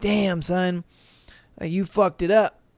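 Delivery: ordinary delivery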